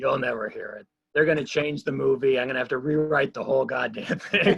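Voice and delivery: mock grumbling voice. Recalling a man who was in a mood, imitating him grumbling. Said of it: "he was just grumbling".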